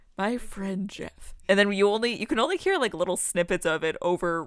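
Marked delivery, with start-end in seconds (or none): 0.2-1.4 put-on very quiet, soft ASMR-style murmur. Imitating a character heard talking very quietly in the background: imitating Travis, very quiet ASMR. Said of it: "A S M R of, like, Travis being like".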